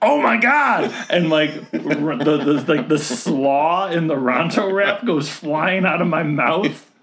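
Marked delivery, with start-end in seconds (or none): 0.0-0.9 acted scream, much higher and louder. Speaker retells spotting someone walking by; retelling a scream. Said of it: "and I scream".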